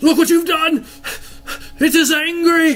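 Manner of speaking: high, loud, wild yell. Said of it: "and he yells out".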